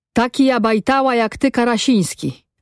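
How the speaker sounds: angry, heated tone thrown back. Narrator reads the village head answering Karasiński at night, replying angrily. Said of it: "odparł wójt ze złością".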